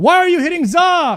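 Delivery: yelling, high and swooping. Player scolds himself for a mistake during a match, yelling at himself. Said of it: "I'm yelling at myself".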